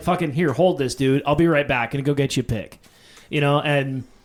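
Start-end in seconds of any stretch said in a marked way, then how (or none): none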